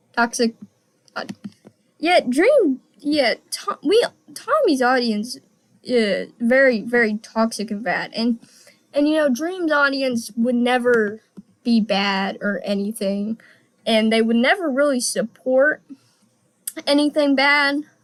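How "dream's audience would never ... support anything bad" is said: ordinary talk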